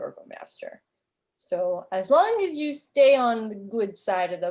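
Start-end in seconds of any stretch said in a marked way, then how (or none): none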